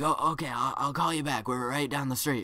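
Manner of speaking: put-on whispering. Retelling a phone call while hiding, retelling a whisper. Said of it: "why are you whispering?".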